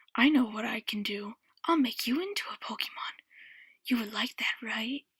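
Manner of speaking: hushed whispering. Narrator reading a story, the Pokemon speaks to the narrator in a whisper. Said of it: "whispered the Pokemon".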